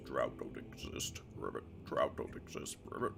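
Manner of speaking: soft, breathy, hushed croaking frog voice. Voicing Fregbear as he speaks up, croaking. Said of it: "He croaks up".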